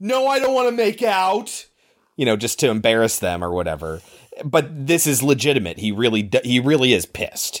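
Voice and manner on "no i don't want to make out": very loud, deliberate shouting outburst. Acting out saying it in class to embarrass someone: very loud voice. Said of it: "say in a very loud voice".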